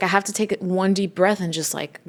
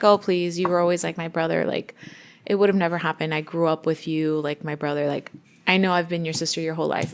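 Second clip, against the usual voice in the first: usual speaking voice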